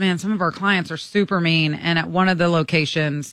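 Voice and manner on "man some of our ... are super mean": plain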